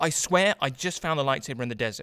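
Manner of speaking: ordinary talk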